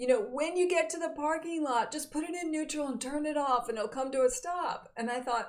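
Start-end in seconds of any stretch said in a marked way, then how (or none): 0.2-4.9 called out, yelled in a higher pitch. Retelling a parent's instructions shouted at a moving truck: imitating father yelling. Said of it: "and he yells at me".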